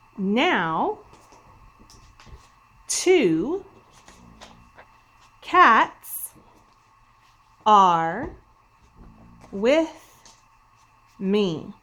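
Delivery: very slow, loud, exclamatory delivery, now drawn out. Video host reading a sentence aloud together with viewers, with strong feeling. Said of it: "this sentence with strong feeling with me".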